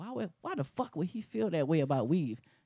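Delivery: put-on, fired-up, impassioned, passionate rant. Joking about how a rant sounds when going off: put-on passionate rant. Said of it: "go off and I got the passion in my voice".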